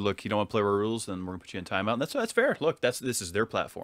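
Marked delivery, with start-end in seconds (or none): none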